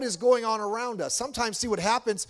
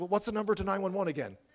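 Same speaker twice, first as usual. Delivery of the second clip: mock-nervous, put-on nervous voice, quieter; 6 dB quieter than usual. Retelling what a flustered woman asked in the moment, imitating her being nervous. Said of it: "she was all nervous and like".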